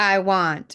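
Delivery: plain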